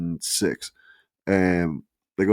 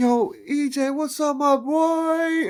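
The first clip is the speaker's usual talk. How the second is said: mock, very high hype holler, boy stretched out. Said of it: "he yelled it like [name] at the loudest thing".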